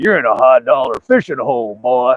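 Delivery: put-on cranky, crabby, sour old man voice. Retelling an old man walking up at a fishing hole, imitating a crabby old man. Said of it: "Just kind of had this crabby attitude".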